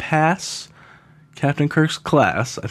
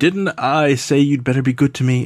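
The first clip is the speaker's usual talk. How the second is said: strange echoing voice; 4 dB louder than usual. Retelling a scene as Captain Kirk is leaving, weird echoey Gary Mitchell voice. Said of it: "in a weird, echoey voice".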